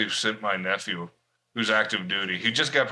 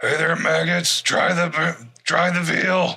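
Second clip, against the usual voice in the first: mock drill sergeant bark, higher; 8 semitones higher, 5 dB louder than usual. Joking in a group conversation, doing a drill instructor voice.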